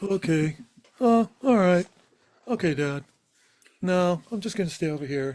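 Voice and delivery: high talking-dog voice. Asked whether they give their dog a voice, the speaker does the dog voice. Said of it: "That's pretty much the dog voice".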